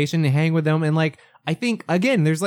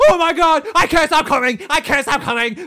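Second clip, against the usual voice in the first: acted comic hysterical squealing, very high screaming; 11 semitones higher, 4 dB louder than usual. Mocking a movie character's scene: imitating scream hysterics. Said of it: "his little scream hysterics for laughs".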